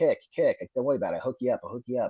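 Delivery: put-on quick Boston-accented master sergeant voice. Retelling what the master sergeant told the speaker, with Top McGrath's Boston accent. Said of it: "He had that Boston accent".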